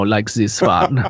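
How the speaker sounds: put-on silly German accent. Explaining which accents are simple to do, showing a silly German accent. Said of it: "like a like a silly German accent".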